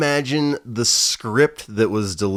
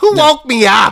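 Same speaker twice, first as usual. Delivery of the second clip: put-on woman's voice, higher and louder; 10 dB louder than usual. Retelling a movie scene where he hears a lady: imitating a lady's voice. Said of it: "he can hear this lady's voice".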